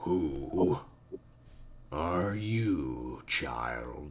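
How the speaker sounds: very slow, deep, grumpy creature voice. Narrating a scene to the listener, the speaker voices the bird in a deep, grumpy voice. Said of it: "It echoes in a deep, grumpy voice".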